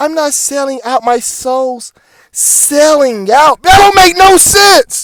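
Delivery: full-on, heated, high, drawn-out yelling. Ranting at an album title heard as selling out: yelling. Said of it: "Sorry for yelling".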